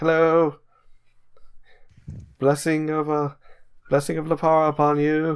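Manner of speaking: cheerful, eager, high, chirpy, friendly voice. Voicing a robed traveler who smiles and waves: smiling friendly traveler greeting. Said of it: "the other one smiles and waves and's like".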